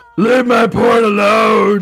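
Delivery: slasher villain character voice. Joking about the killer's motive: Victor Crowley voice. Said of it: "That's my Victor Crowley voice".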